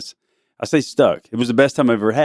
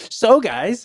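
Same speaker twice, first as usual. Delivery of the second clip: put-on whiny voice, higher pitch; 11 semitones higher than usual. Retelling how the kid host opened the podcast: imitating Mila's whiny voice. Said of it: "she had her little whiny voice".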